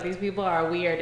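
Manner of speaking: plain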